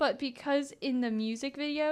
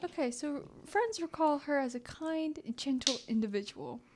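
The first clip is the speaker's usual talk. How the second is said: put-on professorial, scholarly voice. Answering a co-speaker who noticed the quiet talking, in a quiet scholar voice. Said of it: "this is my scholar voice".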